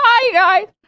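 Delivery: very high, squeaky, cracking voice. Acting out someone greeting people in a voice chat: imitating a voice crack. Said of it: "my voice cracked".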